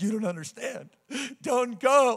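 put-on crying man's voice, tearful. Retelling a grown man begging the speaker not to leave for a job, imitating crying. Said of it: "Crying, grown man, crying".

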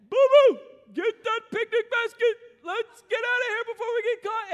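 high, belted delivery. Retelling how an uncle answered the phone, in Yogi Bear voice. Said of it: "And he'd say".

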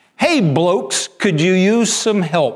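put-on crisp, clipped British accent, called out. Telling a story, voicing the cannibal leader calling to the group in a clipped british accent. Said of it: "calls out in a clipped British accent".

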